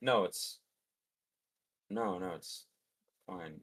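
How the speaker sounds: very slow, low, quiet, weary, bored murmur. Describing how someone's voice drops, imitating Ian, voice an octave lower. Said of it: "hear his voice drop an octave".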